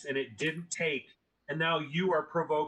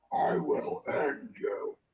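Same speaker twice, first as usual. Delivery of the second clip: furious, raging voice. Voicing a character's rage through telepathy: raging telepathic voice. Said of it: "your rage sounds like in your tel- telepathy voice".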